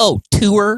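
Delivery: high, teasing echo of the word tour. Retelling how his girlfriend makes fun of how he says tour: imitating girlfriend mocking his pronunciation. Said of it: "she makes fun of how I say tour".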